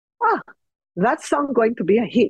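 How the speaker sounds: put-on Greek-accented voice. Retelling what Mom said in the car with the radio on, Mom's Greek accent. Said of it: "she would say in her Greek accent".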